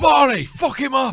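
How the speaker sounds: loud, very high put-on working-class British lad accent. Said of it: "the opposite end".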